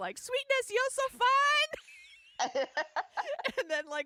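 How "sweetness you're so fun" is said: very high, loud, slow fangirl squeal. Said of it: "she just yells".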